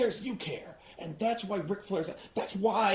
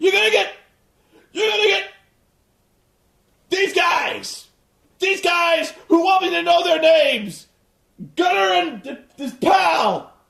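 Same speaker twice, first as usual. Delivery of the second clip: very loud, high-pitched wrestling yell, stumbling; 9 semitones higher, 10 dB louder than usual. Acting out a wrestler screaming off script: Ric Flair impression. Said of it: "Because he goes".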